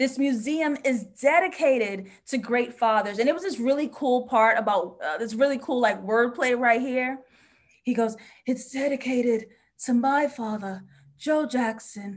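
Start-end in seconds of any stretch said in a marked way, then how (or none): 8.5-12.2 slow, measured, deliberate, spelled-out delivery. Quoting the character's museum dedication as an impression: imitating the character's line. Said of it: "It's my impression".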